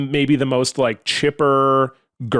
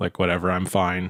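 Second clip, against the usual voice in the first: put-on dour, glum voice, much lower, quieter; 7 semitones lower, 5 dB quieter than usual. Telling a story about a gloomy man answering a chipper girl, imitating a dour guy. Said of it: "just a very like dour kind of guy".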